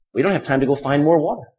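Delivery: plain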